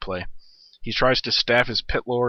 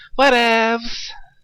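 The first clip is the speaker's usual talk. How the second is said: very high, loud, jeering, mocking parody tone; 12 semitones higher, 7 dB louder than usual. Mocking how someone says a word, imitating someone saying whatevs. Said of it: "giving my impression of what it sounds like when someone says whatevs".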